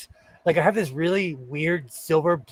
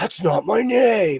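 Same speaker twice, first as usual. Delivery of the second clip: put-on huffy, prickly, irritated, put-out tone; 3 semitones higher than usual. Retelling how an acquaintance answered people asking about his name: huffy. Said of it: "he would get huffy".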